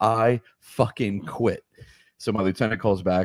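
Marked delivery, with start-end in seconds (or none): 0.0-1.6 pointed, emphatic, spelled-out delivery. Retelling the moment of quitting the firehouse, said louder. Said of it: "let me fucking say it louder for you".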